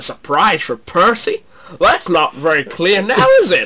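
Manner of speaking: put-on Texan accent. Retelling a series pitch, voicing a questioner, in a texan accent. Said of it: "[TEXAN ACCENT]".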